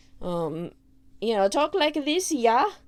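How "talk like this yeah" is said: put-on European accent, higher. Showing how a character was supposed to talk: Sui Seiseki with a European accent. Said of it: "I think she was supposed to talk like this".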